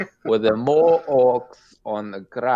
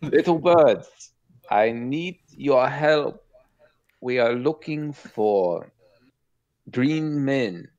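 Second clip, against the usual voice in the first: put-on German accent over the line; 3 semitones higher than usual. A player speaks to birds through a Speak to Animals spell; German accent. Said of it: "A German accent".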